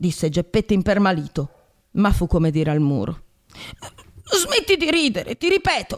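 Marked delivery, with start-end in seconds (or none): 4.2-6.0 very high, shrill, menacing, threatening yell. Narrator reads a man's repeated command to a laughing carved mouth, shouting threateningly. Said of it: "urlò con voce minacciosa".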